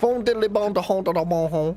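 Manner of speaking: put-on French accent. Streamer joking to viewers during a game, in a mock French accent. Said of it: "it's not really a good French accent impression".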